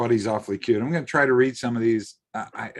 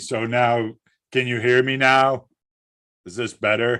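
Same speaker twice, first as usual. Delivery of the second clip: louder, pushed-out, projected voice; 2 semitones higher, 4 dB louder than usual. Told he was too soft-spoken on the last show, he tries a louder voice. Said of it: "I should start talking like this".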